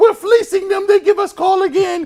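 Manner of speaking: shrill, very high, hysterical laughing voice. Retelling how his wife reacts to pass interference calls: imitating wife laughing hysterically. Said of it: "she hysterically laughs like".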